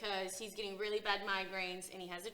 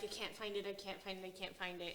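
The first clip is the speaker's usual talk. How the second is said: mock hysterical sobbing with words breaking up; 6 dB quieter than usual. Retelling a book scene where a character cries at a table: imitating hysterical sobbing. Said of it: "he's sobbing, crying hysterically, and is like".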